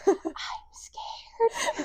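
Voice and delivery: put-on small child's soft, quiet whisper. Imagining a parent waking up to their child, the speaker does a small child's whisper. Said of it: "Just a child voice whispering that".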